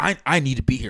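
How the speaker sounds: put-on cranky, angry, worked-up old man voice. Retelling what a comic's boyfriend said to the speaker: imitating an angry old man. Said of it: "angry, angry old guy".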